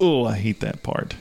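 ordinary talk, nothing marked

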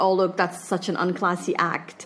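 normal talking voice

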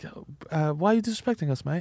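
put-on Australian accent. Retelling an Irish man's retort in a story, in an Australian accent. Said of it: "know why he's Australian accent for the Irish guy".

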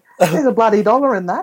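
mock very high, shrill shrieking. Retelling a woman whose shopping trolley was taken: imitating a woman screaming. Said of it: "she's screaming and saying".

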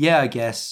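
plain

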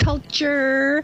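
put-on 'culture' pronounced in valley girl accent. Mocking how a woman on CNN pronounces 'culture', valley girl pronunciation of 'culture'. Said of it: "She speaks like an idiotic valley girl. ... that's how she pronounces the word".

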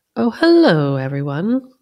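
best polite, sing-song hostess voice. Narrating a story, a woman enters the lounge and greets everyone: best hostess voice. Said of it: "she says in her best hostess voice".

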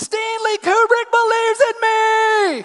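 very high, shrill jubilant scream, me stretched. Retelling a man screaming out his window after a phone call: imitating an overjoyed scream. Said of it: "he screams out like Scrooge on Christmas morning".

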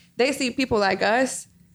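ordinary delivery

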